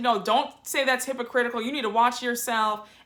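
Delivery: put-on angry snapping voice. Retelling how one woman turned on another at the table: imitating Mary snapping. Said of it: "So now Mary snaps at Heather".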